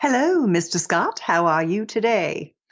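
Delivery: cheesy, put-on British accent, upper-class queenly sound. Greeting the other speaker playfully as the queen: cheesy put-on uk accent. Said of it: "that cheesy rendition of their accent".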